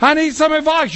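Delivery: hollering out. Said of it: "when you holler out".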